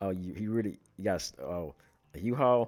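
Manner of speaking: sly, knowing, amused, in-on-it tone. Retelling how a cop on the phone reacted: imitating a smirking cop. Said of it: "he kinda smirked like".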